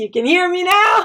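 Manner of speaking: forceful, full-strength, strong, loud, high voice. Explaining voice types to listeners, demonstrating the excess kind, in a strong, loud voice. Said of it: "With a strong, loud voice".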